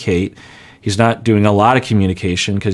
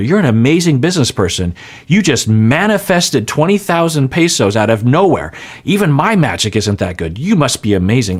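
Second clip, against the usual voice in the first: high, swooping, contemptuous sarcastic gushing laid on thick; 5 semitones higher than usual. Retelling a woman praising a man, the speaker imitates her sarcastic contempt. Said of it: "that is massive sarcastic contempt".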